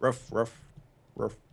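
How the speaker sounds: low barking like a dog. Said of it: "Sound a dog makes".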